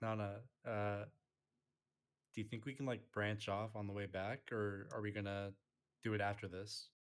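slow, hushed half-whisper. Speaking in character to Nana during a game: half-whispering to a companion. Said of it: "I'm gonna whisper to Nana".

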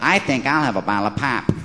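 practiced put-on Northern accent. Showing off a practiced imitation, put-on northern accent. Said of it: "doing a Northern accent ... I have been practicing. Listen to this".

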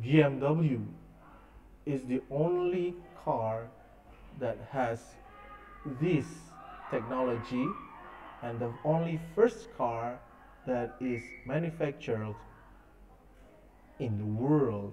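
slow delivery with pauses for emphasis.

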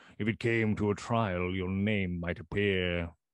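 plain reading voice

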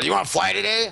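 sassy, snippy, high-pitched voice full of attitude. Retelling what an airport supervisor said: imitating someone with an attitude. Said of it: "obviously had an attitude".

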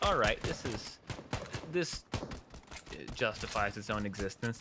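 ordinary talk

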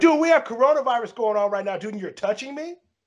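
mock screaming, high and shrill. Retelling a clash with a gym worker who touched him: retelling own scream. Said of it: "And I screamed at him".

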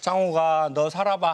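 scolding mother's voice in a dialect.

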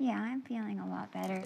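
very soft, quiet, barely audible. Speaker whose jaw is locked up answering how they feel, talking very softly. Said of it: "Why are you talking so soft?".

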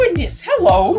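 put-on voice, pitched very high. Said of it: "You sounded just like my mother-in-law there".

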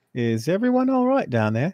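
sudden put-on Australian accent. Calling down the steps in character: Australian accent. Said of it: "all of a sudden you were Australian".

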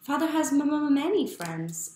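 insisting tone. Answering Rodolfo's remark about his father, he insists, insistent. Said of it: "insisted Neftali".

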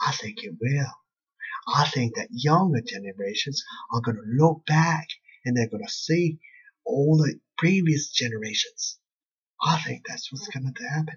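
light hint of a Scottish accent. Answering a question about a movie, with a slight Scottish accent. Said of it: "that was my Scottish accent a little bit".

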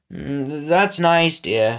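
mumbled words. A lord, distracted by peers eating his cheeses, answers his daughter, mumbling. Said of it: "he mumbled, licking his lips".

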